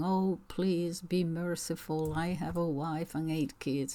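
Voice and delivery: ordinary talk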